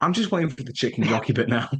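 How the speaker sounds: imitated whisper. Retelling a remark made to the other speaker during a film: imitating own whisper. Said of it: "I remember I whispered to you".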